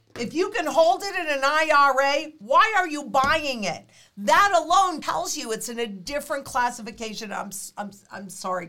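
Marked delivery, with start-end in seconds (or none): 0.2-7.3 heated, worked up, emphatic, pressing hard. Speaker addressing viewers, then catching themself yelling; yelling. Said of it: "I can hear myself yelling".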